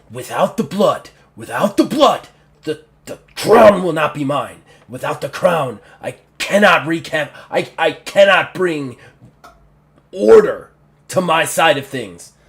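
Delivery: loud, roaring orc voice. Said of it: "roar that".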